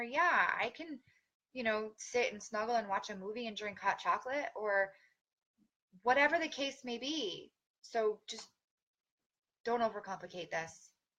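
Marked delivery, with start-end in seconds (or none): none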